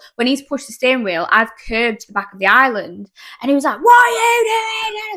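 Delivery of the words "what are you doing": very high, long stretched shriek. Retelling how a big guy in the car screamed at the driver, imitating someone screaming. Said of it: "So he's screaming at me".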